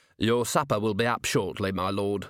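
ordinary delivery

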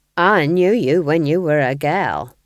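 sullen. One woman needles another in a quarrel, sullen. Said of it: "said Nanny sullenly".

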